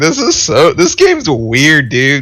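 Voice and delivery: words broken by high, swooping laughter. Chatting with a friend about an online game, the speaker is laughing while talking. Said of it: "I'm laughing at this game".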